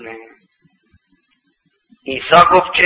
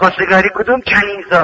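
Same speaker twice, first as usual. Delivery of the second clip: ordinary delivery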